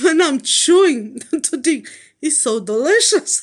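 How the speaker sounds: speaking through laughter. Explaining to listeners, laughing while talking. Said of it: "I'm laughing".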